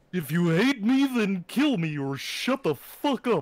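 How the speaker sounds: very high, loud frog puppet voice. Repeating a requested line, in Kermit the Frog voice. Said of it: "do you have a good Kermit voice".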